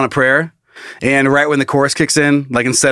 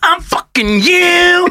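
very high, full cartoon-character voice. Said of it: "sound like Cartman".

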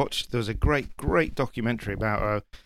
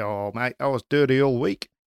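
put-on New Zealand accent. Quoting a rugby captain from a documentary in a new zealand accent. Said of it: "great New Zealand accent there".

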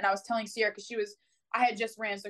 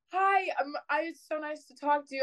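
mock flustered, eager, slightly pitched-up voice; 7 semitones higher than usual. Retelling answering a call from someone at the University of Miami, mock-flustered phone greeting. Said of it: "I was a little like flustered".

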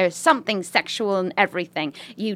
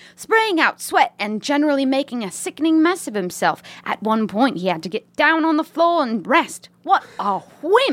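put-on British woman's accent. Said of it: "To read this in a British accent?".

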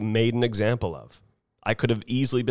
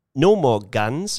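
loud, bad, put-on New Zealand accent; 3 semitones higher, 6 dB louder than usual. Quoting a national leader banning guns: terrible New Zealand accent. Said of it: "that's a terrible New Zealand accent".

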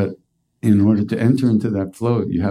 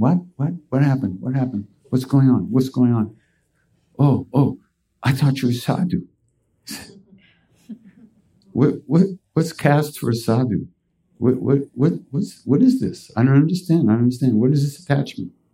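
mock utterly bewildered, lost, baffled high-pitched tone; 5 semitones higher than usual. Speaker retells Maharaji questioning a sadhu, imitating Maharaji baffled. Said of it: "And Maharaji's going".

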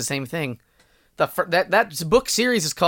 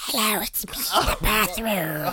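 bathroom voice, quieter; 4 semitones higher, 4 dB quieter than usual. Imagining what the bathroom would sound like if it talked, in a bathroom voice. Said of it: "this is the bathroom voice".

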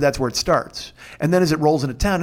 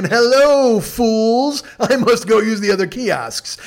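mock lofty, superior, haughty, very drawn out, slow, high; 6 semitones higher, 4 dB louder than usual. Retelling walking past people blocking the kiosks: retelling acting superior. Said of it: "I leaned way back and just fucking".

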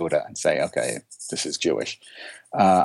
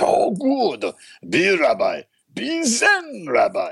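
put-on thick Japanese accent, very high, very slow; 13 semitones higher than usual. After telling his teacher he'll become a rabbi, quoting the reply: Roshi's thick Japanese accent. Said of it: "in his thick Japanese accent".

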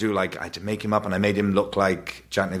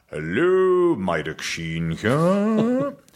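put-on affected posh accent, swooping and drawn out; 8 semitones higher, 3 dB louder than usual. Imitating how dad answers the phone, Maidoc Sheen's posh voice. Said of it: "So he talks like that. He's Welsh, but he puts on a rather posh voice".

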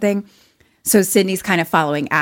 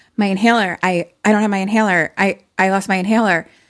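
a little flustered, mildly panicked, stumbling voice. Retelling a scene where a character loses her inhaler: imitating someone panicking a little. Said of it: "she starts kind of panicking a little bit".

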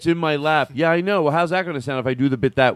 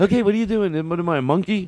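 condescending, talking-down tone with rising pitch; 4 semitones higher than usual. Retelling how he reacts to her: imitating someone's condescending tone. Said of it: "He looks at me like".

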